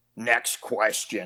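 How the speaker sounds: mock deep guttural voice. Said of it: "he had the guttural voice".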